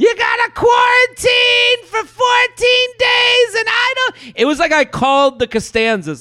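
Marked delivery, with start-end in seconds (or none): 0.0-3.5 put-on very high scream. Speaker retells the mom's phone call the night before, retelling mom screaming. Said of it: "She's screaming".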